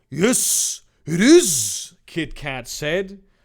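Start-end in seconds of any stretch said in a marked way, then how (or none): 0.1-1.9 bad mock Japanese accent, louder. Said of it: "let's give him a just tremendously racist Japanese accent".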